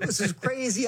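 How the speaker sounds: high, alarmed, freaking-out panic.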